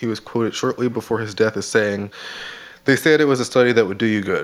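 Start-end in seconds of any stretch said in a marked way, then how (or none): none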